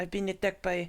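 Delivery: put-on French child accent. Recounting a movie scene, quoting a boy in a little french boy accent. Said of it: "That's like a little French".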